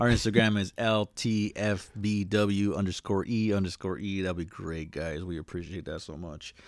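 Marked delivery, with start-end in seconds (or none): 4.2-6.5 low, soft deadpan sarcasm. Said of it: "It sounds like I'm being sarcastic".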